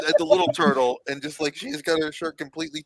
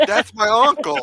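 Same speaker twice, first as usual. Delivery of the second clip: put-on high, angry man's Italian accent; 6 semitones higher, 3 dB louder than usual. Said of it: "sound like a, an angry Italian man".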